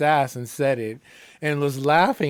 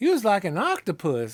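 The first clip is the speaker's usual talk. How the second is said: put-on lovely Southern woman's accent; 4 semitones higher than usual. Retelling what a woman in a southern state said: imitated Southern accent. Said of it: "she had this beautiful accent".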